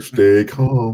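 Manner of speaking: high, irritatingly serene and annoyingly calm voice. Mocking people who say it in a crisis: imitating annoying calm people. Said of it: "that annoying people do when shit's fucked up".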